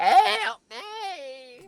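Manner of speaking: loud, very high squeaky cry, "me" stretched. Speaker retells a woman's story about a man, imitating him in a loud squeaky voice. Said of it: "like a really loud, squeaky voice".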